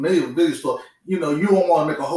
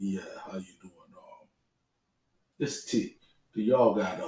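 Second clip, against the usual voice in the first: very soft, hushed, deep put-on voice; 7 semitones lower, 10 dB quieter than usual. Retelling a man calling the video store, imitating the caller's deep voice. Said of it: "had this D-bad voice".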